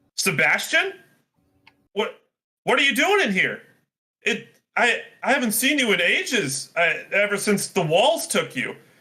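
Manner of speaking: astonished, high-pitched, tripping over the words. Narrator voices a character who finds a man trapped inside, surprised. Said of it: "quite surprised".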